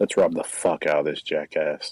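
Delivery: hushed half-whisper, under the breath. Walking out of the office, half-whispering in character to Armistice: half-whispering in character. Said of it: "I'm gonna whisper to Armistice and go".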